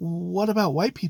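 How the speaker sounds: acted, bone-dry, flat deadpan delivery. Retelling a reply to a man warning against giving keys to strangers, retelling a deadpan reply.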